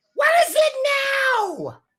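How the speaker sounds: very high, shrill, screechy yell, drawn out. Game master voicing someone behind a door in the back, in a yelly screechy voice. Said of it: "you hear like this yelly screechy voice".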